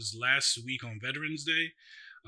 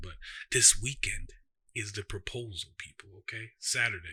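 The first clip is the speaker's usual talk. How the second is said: hushed soft whisper, a little quieter; 3 semitones lower than usual. Sharing news about the proposal in case Ashley is near: whispering. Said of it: "so I'm gonna whisper a little bit".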